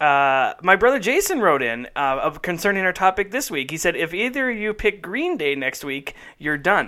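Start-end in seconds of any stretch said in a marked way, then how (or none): none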